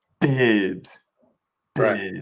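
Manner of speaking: put-on announcer voice. Speaker repeats a word as the announcer would, announcer's accent. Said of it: "or in the accent of the announcer".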